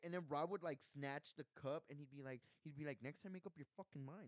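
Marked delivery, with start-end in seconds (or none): 3.0-4.3 put-on muttering, quieter. Retelling what a coworker said to a customer: imitating someone muttering. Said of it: "muttering it".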